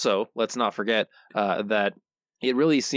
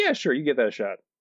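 plain

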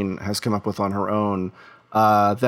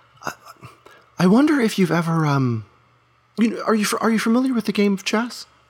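very high, nervous, sheepish, halting stammer; 11 semitones higher than usual. Voicing a character leaning in to ask about chess: sheepish stammering. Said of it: "continues being a bit sheepish and leans in and asks".

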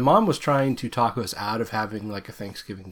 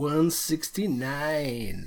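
over-the-top put-on sultry, sexy seductive voice; 4 semitones higher, 4 dB quieter than usual. Recalling saying the wrong episode number: mock-sexy '169'. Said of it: "But I said it real sexy. It's like".

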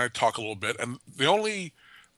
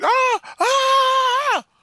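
very high, stretched, drawn-out shrieking screams; 4 dB louder than usual. Retelling a woman running up the street, imitating someone screaming. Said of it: "she starts screaming".

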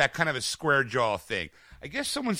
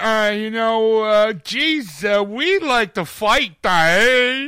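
dim, very slow, loud voice, stretched "eh"; 7 semitones higher, 8 dB louder than usual. Mocking how an actor talked as Eddie Brock in Venom: stupid Tom Hardy Venom voice. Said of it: "why do you gotta come with this stupid voice".

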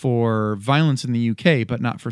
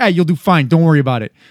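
loud, laid-on, put-on New York accent; 4 semitones higher, 6 dB louder than usual. Imitating how the line would sound if said in New York: New York accent. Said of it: "out of New York".

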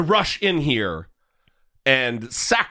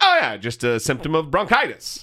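ordinary talk

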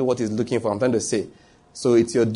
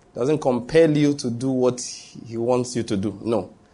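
normal talking voice

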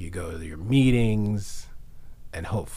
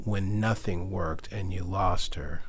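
usual speaking voice

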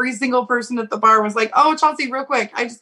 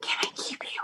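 very quiet, soft, breathy little whisper. Retelling a line from a movie dance scene: imitating a whisper. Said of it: "he whispers to her".

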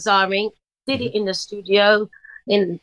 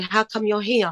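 put-on elderly Jamaican accent. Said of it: "in that old Jamaican man way".

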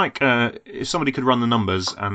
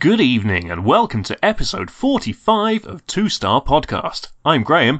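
loud, pitched-up announcer-style voiceover delivery; 6 semitones higher, 5 dB louder than usual. Opening a podcast episode as host, in your voiceover voice. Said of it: "this is my voiceover voice".

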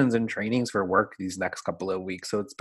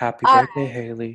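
put-on breathy, sexy voice, said louder; 6 dB louder than usual. Answering a question about a preferred sexy voice: Marilyn Monroe voice. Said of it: "me and, um, Marilyn are here".

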